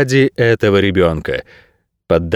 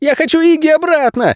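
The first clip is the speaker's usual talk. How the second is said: very high, shrill hysterical shout. Levi cuts in on an argument with Nairat: hysterical shout. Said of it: "истерично крикнул он".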